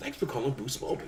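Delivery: friendly, easygoing phone-line voice.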